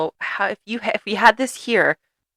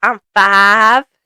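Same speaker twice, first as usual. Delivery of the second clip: put-on very loud, cute, little Southern Alabama child accent; 3 semitones higher, 8 dB louder than usual. Retelling a father's exchange with his young son, imitating the boy's little Southern Alabama accent. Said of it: "the most adorable little Southern Alabama accent".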